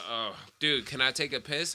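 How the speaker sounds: usual speaking voice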